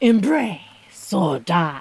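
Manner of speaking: theatrical, dramatic movie-vampire delivery. Repeating a rule someone knew, in a vampire impression. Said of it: "That was not a terrible vampire impression".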